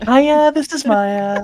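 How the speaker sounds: put-on woman's voice. Joking that they can't do an impression of the other speaker: Maya impression. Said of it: "I can't do a Maya impression".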